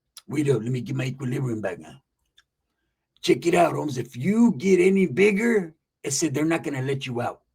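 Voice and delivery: put-on old man's voice. Retelling what a man from Sanho told him, imitating how he sounded. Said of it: "this is exactly how he sounded".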